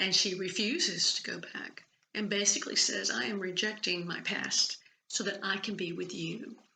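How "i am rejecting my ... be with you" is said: ordinary talk, nothing marked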